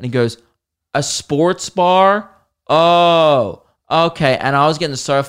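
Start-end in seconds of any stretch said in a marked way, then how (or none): 0.9-4.4 put-on very slow, smug, condescending drawl. Retelling a fellow passenger's reply on a plane: imitating a condescending man. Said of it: "This guy's just been so condescending".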